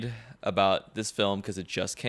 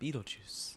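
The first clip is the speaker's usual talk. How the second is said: whispered, very breathy; 3 semitones higher, 17 dB quieter than usual. Answering a request for an impression of Winona Ryder saying Beetlejuice. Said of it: "you can do better than that".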